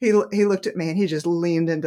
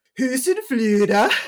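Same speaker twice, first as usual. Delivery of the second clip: put-on Scandinavian accent, higher in pitch and louder; 7 semitones higher, 5 dB louder than usual. Retelling how a man answered a question about the shop's name, imitating a Scandinavian accent. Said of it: "when you're doing a Scandinavian accent".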